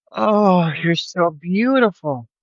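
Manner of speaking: drawn-out awestruck wonder, high and slow. Retelling seeing a deer up close: retelling own awed gasp.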